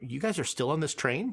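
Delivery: ordinary delivery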